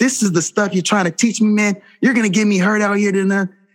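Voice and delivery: mock very high, raw yelling and screaming. Retelling coming off to the sideline after a missed tackle, reenacting own yelling. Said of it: "I'm yelling and screaming at Fry".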